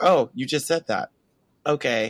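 mock deadpan flat delivery. Speaker retelling how a man answered a coworker, imitating a deadpan reply. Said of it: "He literally like deadpan faces and is just like".

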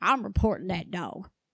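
put-on Southern US accent from North Carolina. Quoting someone in North Carolina threatening to report the dog, North Carolina accent. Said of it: "they didn't say it like that because they were in North Carolina".

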